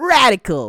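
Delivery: loud, edgy nineties game-hero voice with attitude. Imitating the old cartoon hero's catchphrase: nineties Sonic voice. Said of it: "the one in the nineties where he's like".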